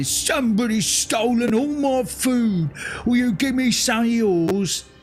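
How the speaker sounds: big booming monster voice. Narrator reading a gamebook aloud to a player, voicing the ogre: booming ogre voice. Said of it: "the ogre's voice booms out saying".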